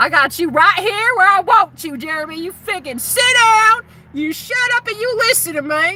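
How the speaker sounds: high-pitched, put-on American Southern accent. Retelling what own higher self said to a viewer: southern accent. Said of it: "my higher self has a Southern accent".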